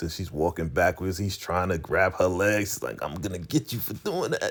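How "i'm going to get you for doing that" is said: mock teasing, making-fun, taunting tone. Retelling her mocking his threat: imitating someone mocking. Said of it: "she's just making fun of".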